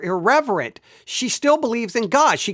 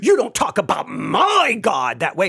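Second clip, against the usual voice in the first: put-on offended tone; 3 semitones lower than usual. Voicing an imagined objection on god's behalf, mock-offended. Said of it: "and we should be offended".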